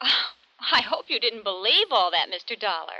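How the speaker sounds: lighthearted amusement. Answering an insurance man about a dead racehorse claim, amused, like a laughing matter. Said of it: "You sound like it's a laughing matter".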